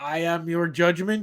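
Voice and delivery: bellowing creature voice. Telling of a magic gigantic Lurgin bouncing off buildings, in a bellowing Lurgin voice.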